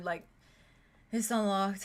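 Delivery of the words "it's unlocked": heavily slurred speech. Voicing a drunk character answering a knock: very slurred voice. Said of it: "a very slurred".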